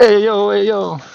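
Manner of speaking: put-on Neapolitan accent, high, slow, unhurried. Joking as a Russian turning into an Italian: put-on Neapolitan Italian voice. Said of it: "That kind of Italian".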